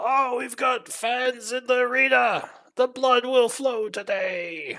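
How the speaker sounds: loud, yelling priest voice. Voicing a priest who announces fans in the arena: priest yelling. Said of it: "priest will immediately yell".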